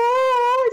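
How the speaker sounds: very high, gushing coo on aw.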